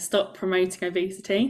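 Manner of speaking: ordinary talk, nothing marked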